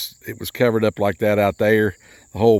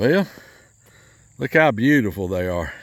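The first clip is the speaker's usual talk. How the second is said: faintly ironic, lightly sarcastic tone. Showing the ruined sweet potato patch to viewers: a little sarcastic. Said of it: "I'm being a little sarcastic".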